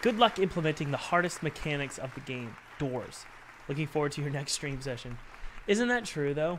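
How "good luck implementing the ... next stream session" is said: ordinary talk, nothing marked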